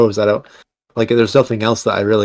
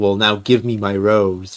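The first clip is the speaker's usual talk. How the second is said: put-on creepy character voice. Retelling a scene where Yoda briefly turns evil, imitating creepy evil Yoda. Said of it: "He says in a very creepy tone".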